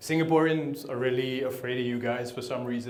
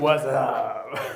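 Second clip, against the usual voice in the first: joking put-on voice, louder; 5 dB louder than usual.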